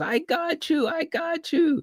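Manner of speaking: mock very high, very drawn-out gloating. Retelling a scene where a woman gloats: imitating someone gloating. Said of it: "She was even gloating at first".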